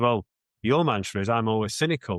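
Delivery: ordinary delivery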